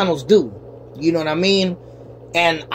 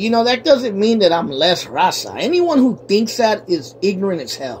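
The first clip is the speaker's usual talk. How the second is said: normal talking voice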